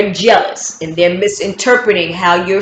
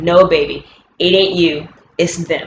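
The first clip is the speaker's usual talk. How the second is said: plain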